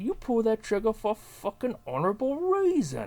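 very high, swooping put-on voice, swinging pitch. Doing a best impression of Tom Hardy in a monologue: Tom Hardy impression. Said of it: "that's my best impression of Tom Hardy".

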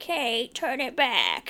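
put-on very drawn-out, high, very slow squawking old woman voice. Retelling what grandma said after the channel changed: pterodactyl-like voice. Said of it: "She sounded like this".

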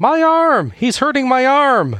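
very high, cartoonish, bellowing wail of pain. Commenting on a wrestling match, acting out Roma's bellow during an arm hold. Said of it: "by bellowing".

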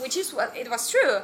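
normal talking voice

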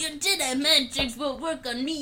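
put-on alien creature voice. You are doing an impression of a Star Wars alien for your friends, Watto impression. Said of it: "You just need my Watto impression".

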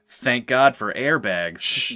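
slow, deliberate delivery. Quoting a line from a movie: imitating Adam Scott's intonation. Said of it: "I'll try to do his intonation as perfectly as possible".

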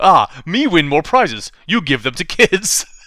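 put-on loud, slow, childish baby talk. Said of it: "I'll use baby talk".

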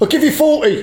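very high, put-on cockney dealer voice. Imitating an antiques dealer, in a put-on cockney accent. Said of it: "they've all suddenly become cockney".

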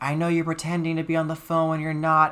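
mock yelling, pitched high. Retelling how a woman yelled at them while they were on the phone, mock yelling. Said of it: "she's yelling at me saying".

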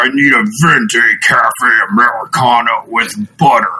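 loud, shouted monster voice. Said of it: "ordering in a keto monster voice".

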